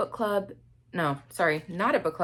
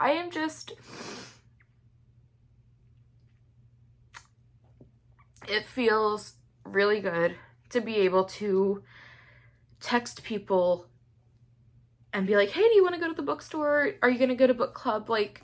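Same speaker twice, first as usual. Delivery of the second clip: tearful voice, crying while talking; 3 semitones higher than usual. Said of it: "I don't know why I'm crying like this".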